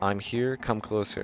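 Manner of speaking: usual speaking voice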